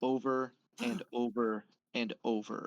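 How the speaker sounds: ordinary talk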